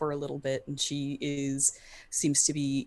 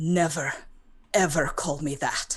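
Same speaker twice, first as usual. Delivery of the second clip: grave, dead-earnest, very serious tone; 4 dB louder than usual. After being called [name], she answers the one who said it: very serious. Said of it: "she says very seriously".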